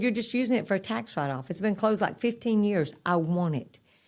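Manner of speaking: usual speaking voice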